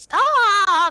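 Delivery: very high, very loud, shrill drawn-out shriek. Demonstrating how she should sound, switching to a high-pitched voice. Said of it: "no longer in the low voice".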